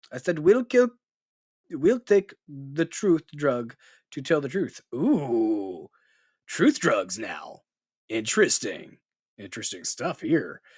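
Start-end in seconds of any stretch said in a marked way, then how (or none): 0.3-4.8 put-on Russian accent. Reading out a quoted statement: put-on Russian accent. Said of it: "a Russian accent".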